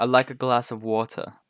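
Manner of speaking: put-on British accent. Contrasting how british people say water: british accent. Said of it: "we say water and they say water".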